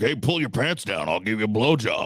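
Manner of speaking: mock-sarcastic tone, put-on sarcasm. Retelling what they sarcastically said to him, retelling a sarcastic remark. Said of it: "I sarcastically, I looked at him".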